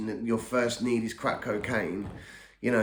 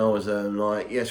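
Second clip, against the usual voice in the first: plain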